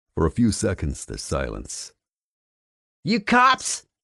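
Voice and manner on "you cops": very high, rough, craggy smoker's voice. Narrator voices a woman calling out after a gunshot; craggy female smoker's voice. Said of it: "a craggy female smoker's voice calls out".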